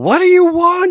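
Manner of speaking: shrill, very loud, high, drawn-out yell. Retelling how she yells from upstairs: imitating someone yelling. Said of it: "She just yells from upstairs".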